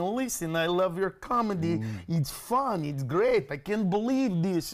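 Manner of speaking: put-on speaking with a Russian accent. Quoting a Russian man seated beside him on a plane: Russian accent. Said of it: "there's a Russian guy sitting next to me going".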